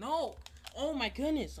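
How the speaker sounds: exasperated yell, very high pitched and loud. Reacting while trying to end the episode: annoyed outburst. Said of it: "I'm so annoyed".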